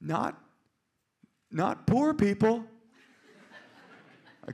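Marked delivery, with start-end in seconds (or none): 0.0-2.6 put-on high, slow, faltering four-year-old voice. Retelling what a four-year-old daughter said at dinner: imitating four-year-old daughter. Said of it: "little four-year-old eyes".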